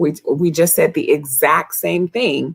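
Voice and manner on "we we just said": plain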